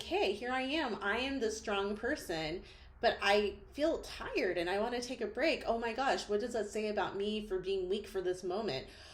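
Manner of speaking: slightly sarcastic mock self-talk. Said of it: "I say it in a slightly sarcastic way".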